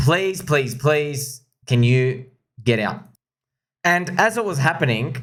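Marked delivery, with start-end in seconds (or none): 0.0-3.0 mock imploring, begging voice, repeated pleas. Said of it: "We begged him and we begged him".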